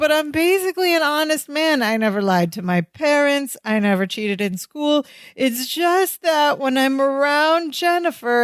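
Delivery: tearful, pleading voice through sobs. Retelling a scene where Larry confesses while crying: imitating someone sobbing. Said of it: "he's crying, he's sobbing".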